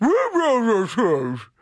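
high-pitched dog-like voice. Host repeating, when asked, what dogs' shoes are called: saying it like a dog. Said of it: "I said it like a dog".

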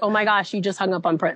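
ordinary talk

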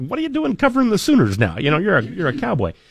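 high-pitched, teasing jab.

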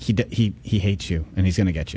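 quiet half-whisper under the breath. Acting out a joke of half-whispering to the boxer: acting out a half-whisper. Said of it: "and then I whisper".

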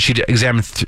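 plain

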